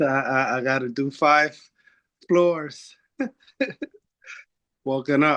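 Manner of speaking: puffing, winded, stammering while catching breath. Joining after climbing five floors, asked to speak, out of breath. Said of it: "let me just catch my breath".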